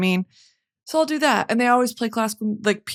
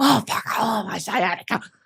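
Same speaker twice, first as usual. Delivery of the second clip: acted huffing and puffing. Describing a barre class, acting out herself in the corner; mock huffing and puffing. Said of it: "I'm huffing and puffing in the corner".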